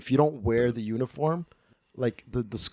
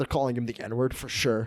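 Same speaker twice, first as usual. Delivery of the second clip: ordinary talk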